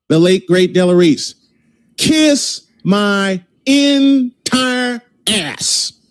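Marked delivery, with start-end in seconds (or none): 2.0-5.9 very slow, deliberate, drawn-out angry voice. Host borrows a famous line to respond about the analytics: angry. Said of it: "he's very angry".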